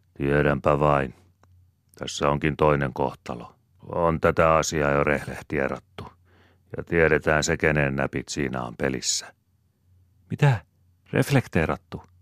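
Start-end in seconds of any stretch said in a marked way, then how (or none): 10.3-12.0 startled, high, surprised exclamation. Reading a story aloud, Svea reacts to Käkriäinen's word, exclaiming. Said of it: "Äänähti Svea".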